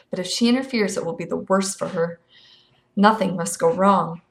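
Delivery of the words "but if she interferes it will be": plain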